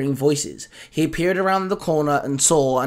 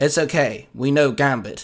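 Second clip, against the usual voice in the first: usual speaking voice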